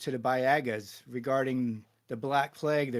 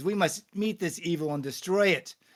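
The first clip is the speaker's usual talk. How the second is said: voice rising, pitched higher; 5 semitones higher than usual. Voicing a Templar speaking up against the chief: Templar's voice rising. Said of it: "voice rises up".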